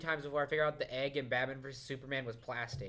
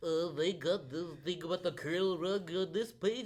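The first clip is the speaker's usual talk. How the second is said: high, slow, drawn-out nerdy voice; 5 semitones higher than usual. Mocking how online nerds complain about a movie: imitating online nerds. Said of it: "What are you under the impression that nerds sound like?".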